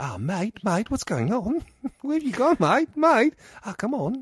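put-on, fake Australian accent. Retelling what they were just going, in a put-on Australian accent. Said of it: "I like how you default to an Australian accent".

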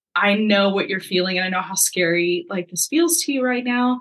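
ordinary delivery

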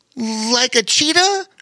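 nervous, uneasy voice. A storybook animal guesses which kind of cat it might be, nervous. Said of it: "said a nervous Bobo Chico".

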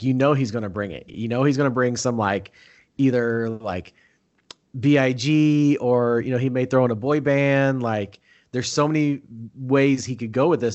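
ordinary talk

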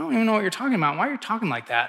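ordinary delivery

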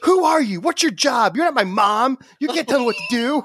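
acted-out defiant yelling, very high-pitched and shrill. Retelling yelling at the patient care advocate in the hospital: imitating his own past yelling. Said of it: "And I'm yelling at her like".

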